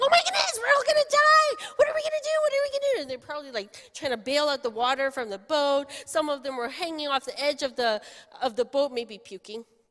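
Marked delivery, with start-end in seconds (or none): 0.0-3.0 frantic, very high, shrill cries of terror. Retelling the storm story to children, imitating disciples screaming in panic. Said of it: "They were screaming".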